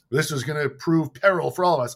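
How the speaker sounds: put-on stilted, expository declaiming delivery. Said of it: "the only style of talking in this movie is like".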